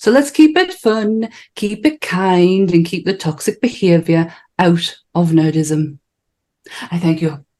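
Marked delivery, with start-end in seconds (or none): 0.0-6.0 strong Geordie accent. A host signing off to viewers in a Geordie accent. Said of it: "I sounded very Geordie towards the end of that".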